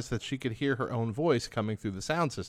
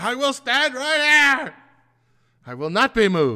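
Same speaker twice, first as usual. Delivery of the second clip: very high, very loud, shrill, booming and defiant; 12 semitones higher, 10 dB louder than usual. Reacting to a story about a pastor, act out a mock-defiant declaration. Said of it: "defiantly declared into the mic".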